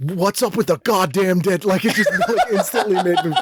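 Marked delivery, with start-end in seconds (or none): 0.0-1.7 put-on all-out, full, strong Boston accent. Recalling asking people about all the dead dogs: full boston accent. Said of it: "made me go full Boston".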